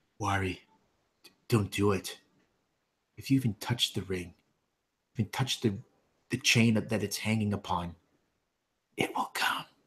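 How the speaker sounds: quiet half-whispered voice. She takes both your hands in hers, half-whispering so only you can hear. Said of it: "she whispers so that only you can hear".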